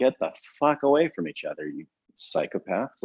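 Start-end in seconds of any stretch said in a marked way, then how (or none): none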